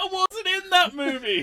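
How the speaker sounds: shrill, booming, very high, loud, drawn-out, deliberate yell. Retelling how a character protested being linked to old events: imitating Johnny Lawrence. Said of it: "Basically going".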